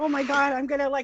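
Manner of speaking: mock shaky jittery voice. Retelling own words while shaking from an energy drink: imitating being shaky and jittery. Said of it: "I was shaking and".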